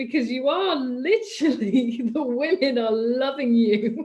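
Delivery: laughing while talking. Asking another speaker to do something for Valentine's Day, laughing while talking. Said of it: "I don't know why I'm laughing".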